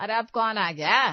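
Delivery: shouting. Hearing a knock at the door and asking who came: shouting. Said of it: "काहे इतना चिल्ला रही हो?".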